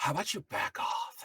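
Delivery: barely audible, very quiet, breathy hushed whisper. Player voicing their character's line to an enemy during a game: whisper. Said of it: "and I whisper".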